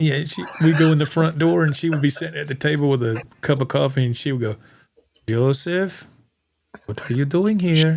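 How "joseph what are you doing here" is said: clumsy, slow, badly attempted German accent. Retell her greeting from the table as you came in, as Mrs. Groves in an attempted German accent. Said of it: "his attempt at a German accent".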